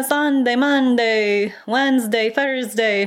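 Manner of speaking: fake Italian accent. Attempting a film quote again, in a bad Italian accent. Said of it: "I don't know why I attempted it again".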